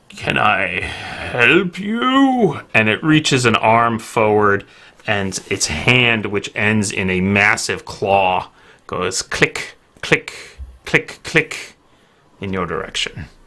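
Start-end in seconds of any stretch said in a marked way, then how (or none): 0.2-2.6 put-on very slow, old crackly voice with swooping pitch. Narrating a scene where a figure greets the listener: old, crackly voice. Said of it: "An old, crackly voice speaks out".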